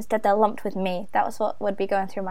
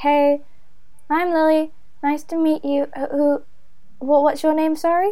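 mopey, fumbling, sad, awkward, pitched-up delivery; 5 semitones higher, 3 dB louder than usual. Showing how she would introduce herself to someone at a party: sad, awkward introduction. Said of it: "You sound very sad while you're making friends".

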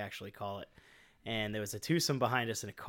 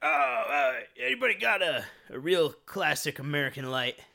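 put-on boozy slurring drunk voice; 5 semitones higher, 7 dB louder than usual. Retelling a drunk golfer asking the group for a light: imitating a drunk man.

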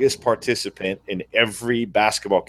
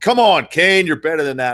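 mock yelling, pitched up; 7 semitones higher, 4 dB louder than usual. Retelling how Pops yelled after a turnover: imitating a yelling dad. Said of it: "Pops is yelling at me".

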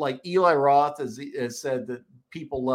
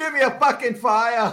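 put-on horrible, very high-pitched Boston accent; 9 semitones higher, 6 dB louder than usual. Retelling a movie security guard's line, in a horrible Boston accent. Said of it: "in that horrible Bostonian accent".

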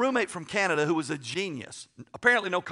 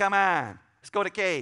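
put-on hard Yankee accent. Retelling what a man kept saying to him, imitating his hard Yankee accent. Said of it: "he talked with a hard Yankee accent".

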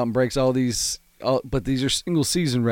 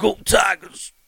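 pitched-up, casually tossed-off delivery; 8 semitones higher, 4 dB louder than usual. Asked for your best impression and not having practiced, give it a go, Ed Orgeron impression. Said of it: "Let's hear your best Ed Orgeron".

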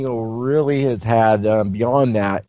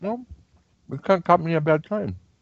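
talking around a mouthful of food, higher pitch; 7 semitones higher, 4 dB quieter than usual. On air, a co-host answers while eating: talking with mouth full. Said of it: "you're eating?".

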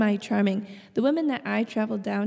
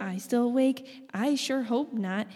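normal talking voice

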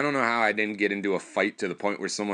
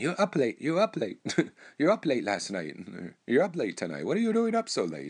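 put-on heavy, swooping Korean accent, old woman voice; 3 semitones higher than usual. Quoting an old korean lady who was always by the book, thick korean accent. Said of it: "had a really thick accent".

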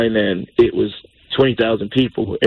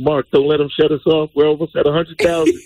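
mock, mild half-yelled call; 4 semitones higher than usual. Retelling screaming at someone online as the count neared 100k: retelling a scream. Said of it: "I just screamed at him".

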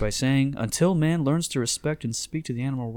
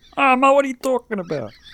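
put-on whiny voice, higher and louder; 12 semitones higher, 9 dB louder than usual. Repeating the other speaker's impression back: Ray Romano impression. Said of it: "it's just Ray Romano".

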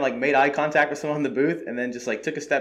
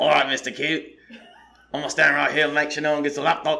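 rough, put-on Yorkshire accent. Retelling what a man working security said, attempted Yorkshire accent. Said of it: "That is a York accent".

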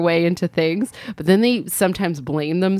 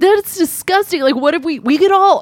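very high, loud, indignant yelling; 11 semitones higher, 6 dB louder than usual. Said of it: "just yelling at the host".

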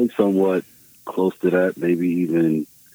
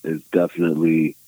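ordinary delivery

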